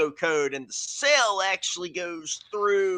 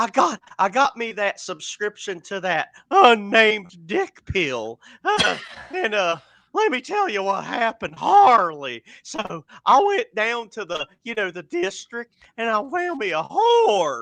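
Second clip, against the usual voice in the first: high, swooping cartoon mouse voice; 4 semitones higher, 4 dB louder than usual. Retelling what a man told him, doing the man's Mickey Mouse voice. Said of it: "He talked like kind of like Mickey Mouse".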